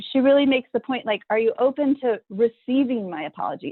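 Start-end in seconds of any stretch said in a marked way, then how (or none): none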